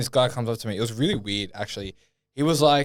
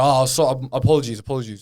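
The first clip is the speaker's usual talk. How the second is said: imitated aggressive tone, louder; 4 dB louder than usual. Retelling a gym member's apology, imitating an aggressive tone. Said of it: "he's still being aggressive with the tone, his voice".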